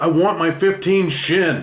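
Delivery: high, loud, slow demanding shout.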